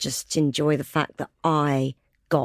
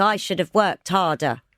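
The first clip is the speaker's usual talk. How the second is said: usual speaking voice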